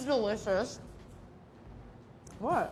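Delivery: talking with mouth full. TV host tasting an eclair on air with a chef; talking with mouth full. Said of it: "I'm talking my mouth full".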